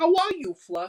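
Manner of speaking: put-on Boston accent, pitched way up. Retelling the boy getting his stuffed dog back, Kling in a Boston accent. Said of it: "I'm stuck in the Boston accent".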